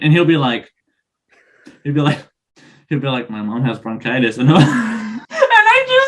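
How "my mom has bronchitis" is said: bone-dry, dead serious, low deadpan delivery. Retelling a running joke, the speaker quotes a man in mock deadpan delivery. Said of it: "he does it with a straight face".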